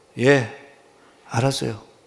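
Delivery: empty, soulless, indifferent, uninterested tone. Acting out a child answering a parent while scrolling a phone: soulless, indifferent voice. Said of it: "영혼 없는 목소리로".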